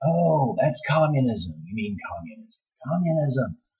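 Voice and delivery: all-out loud, high screaming outburst. Retelling how conservative listeners react to the Great Reset: imitating people screaming.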